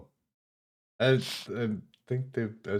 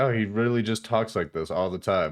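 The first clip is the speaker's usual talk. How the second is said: normal talking voice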